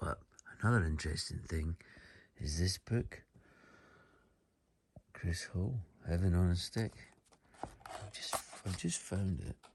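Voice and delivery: soft, hushed, quiet speech.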